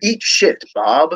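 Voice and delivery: grand, dignified announcer voice. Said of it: "with that supreme announcer voice".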